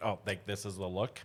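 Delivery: ordinary delivery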